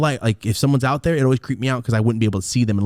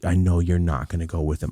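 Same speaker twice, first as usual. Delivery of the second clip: put-on sad voice, lower pitch; 5 semitones lower, 3 dB quieter than usual. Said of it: "all sad, like".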